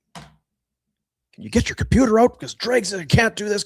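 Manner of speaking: loud, high-pitched, demanding yell. Repeating what another person just yelled at you: imitating Jack yelling. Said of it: "Jack's yelling at me".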